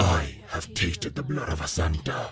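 very low, deep, crackling voice. A narrator voices an unseen speaker heard from the bedroom: deep, crackling voice. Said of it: "I heard a deep, crackling voice say".

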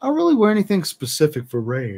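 talking through a yawn. Chatting casually to listeners, yawning while talking. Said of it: "Why am I yawning again?".

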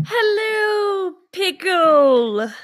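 very high, loud, drawn-out "hello". Quoting a favorite movie line: Mrs. Doubtfire voice. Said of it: "I just kind of Missus Doubtfired it myself".

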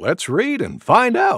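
ordinary delivery

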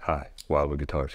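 mock smooth sultry voice. Describing how Wildwood Guitars staff answer the phone, imitating a sultry, smooth voice. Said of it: "smooth, like their voices on the phone".

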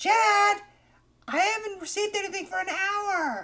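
very high breakdown scream, "hour" stretched out. Imitating a Twitch streamer screaming in a breakdown over donations: imitating someone screaming. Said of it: "If she's screaming her ass off".

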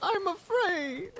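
high, slow, scared, whining creature voice. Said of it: "like they're whining".

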